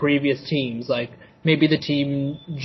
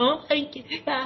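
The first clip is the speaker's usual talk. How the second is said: mock crying character voice, higher and quieter; 12 semitones higher, 6 dB quieter than usual. Mocking a scene where Rock Lee cried: imitating Rock Lee crying. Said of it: "that was just my impression".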